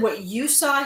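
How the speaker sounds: usual speaking voice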